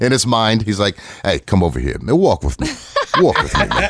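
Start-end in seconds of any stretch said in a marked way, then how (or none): 1.2-3.9 put-on swooping northeastern New Jersey accent. Imitating a loaded friend at a party: imitating Gooch's New Jersey accent. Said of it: "he went straight to, uh, straight to New Jersey".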